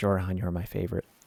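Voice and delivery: whispered. Recounting being offered a cookie and what they said back: retelling a whisper.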